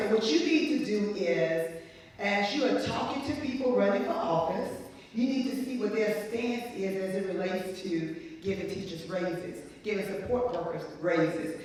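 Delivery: ordinary delivery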